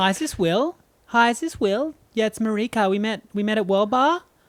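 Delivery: put-on fake girl's voice. Rehearsing a phone call to a man named Will, in a fake girl's voice. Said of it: "just practice my girl's voice".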